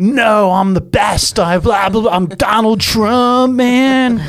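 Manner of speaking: slow, surfer-style stoned voice. Retelling a post after the Home Alone actor's claim: stoned-sounding Donald Trump impression. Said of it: "I like that impression".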